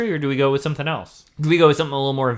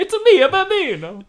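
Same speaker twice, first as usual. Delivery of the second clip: put-on Italian accent, much higher; 4 dB louder than usual. Riffing on team names, the speaker breaks into a Mario voice. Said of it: "That was my Italian guy".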